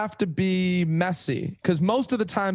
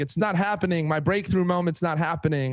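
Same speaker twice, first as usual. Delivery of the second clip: usual speaking voice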